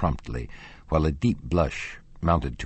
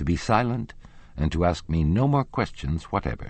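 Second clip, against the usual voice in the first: ordinary delivery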